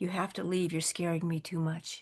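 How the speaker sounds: quiet, soft, hushed pleading. Recalling speaking to him in the dark at night, retelling a quiet plea. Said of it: "I said it just as quietly as that".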